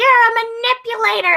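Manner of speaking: very high, shrill shouting. Retelling how someone on a stream was yelling at the speaker: imitating someone yelling. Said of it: "just yelling at me".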